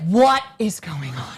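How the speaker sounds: motherly voice. Describing how their mother would react walking in on them, imitating Helen. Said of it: "she'd be like".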